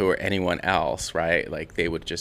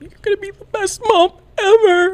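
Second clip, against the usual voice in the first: very high, loud fake-crying blubbering voice; 8 dB louder than usual. Retelling Kim's speech at a baby shower, in Kim's fake crying voice. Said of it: "she does her like fake crying voice".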